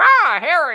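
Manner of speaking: high, loud, crazy, zany character voice.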